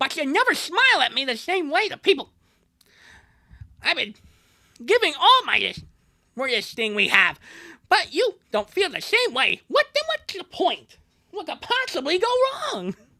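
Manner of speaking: very high character voice, swooping up and down. Reading a girlfriend's lines from a fan story: Bubsy impression. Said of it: "That's my Bubsy impression".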